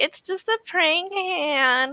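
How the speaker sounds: put-on very high, slow Valley Girl voice, drawn out. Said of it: "She's got that Valley Girl voice".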